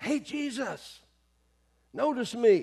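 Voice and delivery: put-on, high, very slow, drawn-out calling-out yell. Retelling a man calling out to jesus: imitating someone yelling. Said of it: "This guy's yelling".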